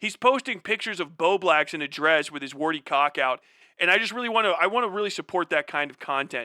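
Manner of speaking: ordinary talk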